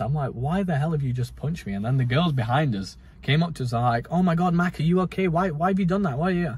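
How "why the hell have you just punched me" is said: mock puzzled, bewildered, baffled, confused tone. Retelling being punched, the speaker acts out asking him why: retelling a confused reaction. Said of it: "I looked at him so confused".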